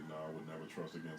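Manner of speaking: ordinary talk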